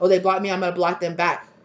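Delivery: ordinary delivery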